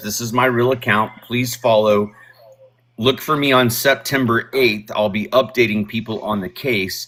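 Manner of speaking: plain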